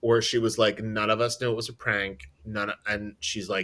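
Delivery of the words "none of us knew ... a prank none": usual speaking voice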